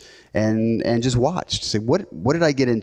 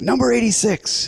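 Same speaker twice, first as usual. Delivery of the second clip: very high-pitched, lively, animated calling out; 11 semitones higher than usual. Retelling a woman calling numbers in a full lobby: imitating a more animated call. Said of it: "starts getting a little more animated".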